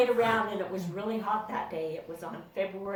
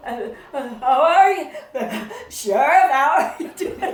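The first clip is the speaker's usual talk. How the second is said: put-on, very loud, high, nervous stuttering; 6 semitones higher, 11 dB louder than usual. Retelling how a nervous teacher greeted the sheriff: imitating a nervous stutter. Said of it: "He was stuttering around".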